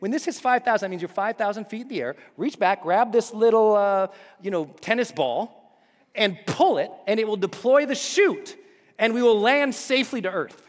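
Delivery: ordinary talk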